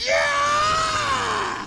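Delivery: high, shouted, wild yell. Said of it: "And I was like".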